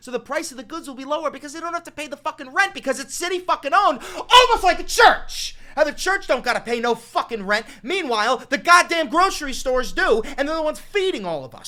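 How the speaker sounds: angry cursing rant. A video host talking to viewers, pissed off. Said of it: "Sorry I sound a little bit pissed off".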